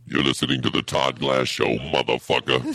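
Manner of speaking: big, deep, booming radio-host voice. Demonstrating his radio voice with a show intro: deep booming radio voice. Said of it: "the voice you usually have is it's much deeper. It's a booming voice".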